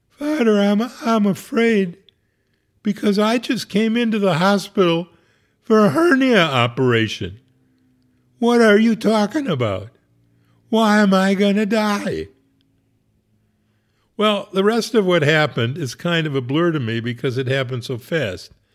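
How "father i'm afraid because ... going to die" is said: put-on high sobbing through every word. Retelling a hospital patient's answer to the speaker's best friend, imitating someone sobbing. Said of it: "She sobbed".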